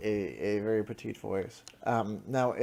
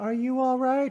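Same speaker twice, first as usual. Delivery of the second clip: put-on very high, small, tiny childlike voice; 7 dB louder than usual. Voicing a small creature in a horror scene: small childlike voice. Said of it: "a small, perhaps even childlike voice going".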